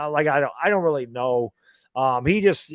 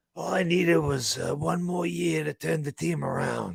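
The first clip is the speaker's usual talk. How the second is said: hushed, rough, soft and creaky put-on voice; 3 semitones higher, 5 dB quieter than usual. Trying out an impression of Dave Gettleman talking: Dave Gettleman voice. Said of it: "Let me let me try to do my Dave Gettleman voice".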